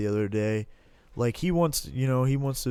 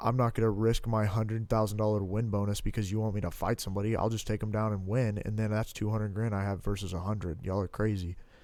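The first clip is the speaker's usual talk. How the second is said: usual speaking voice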